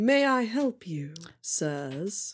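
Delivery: put-on very slow, haughty, condescending older man voice. Voicing an older man at the door greeting visitors: condescending older doorman voice. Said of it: "looks down over the bridge of his very sharp nose at you".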